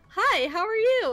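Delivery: very slow, high, loud, put-on extra-nice fake voice. Demonstrating greeting a drive-thru customer at In-N-Out, in a fake-nice customer service voice. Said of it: "raise my voice to sound like I'm really really nice".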